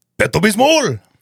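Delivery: very high puppet voice with put-on Spanish accent. Recalling what an old puppet would say, in a spanish accent. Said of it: "and with a Spanish accent".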